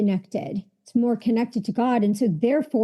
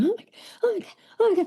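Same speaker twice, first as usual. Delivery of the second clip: very high, mock tearful sobbing cry; 10 semitones higher than usual. Retelling a moment alone in the bathroom: retelling own crying. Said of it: "And I was crying and I was going".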